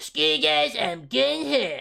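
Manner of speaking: put-on nasal raspy bratty cartoon kid voice. Like someone showing off a favorite cartoon character impression, pushing the voice nasal, whiny and cocky the way a spoiled little kid would. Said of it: "raspy voice ... like Batman".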